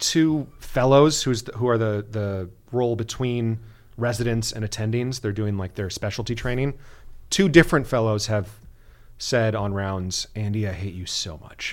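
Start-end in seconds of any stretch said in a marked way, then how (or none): 10.4-11.7 half-joking, half-serious jabbing tone, much quieter, lower. Quoting what fellows said to Andy on rounds; retelling a half-joking jab. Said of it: "half jokingly but half seriously".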